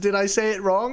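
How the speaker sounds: plain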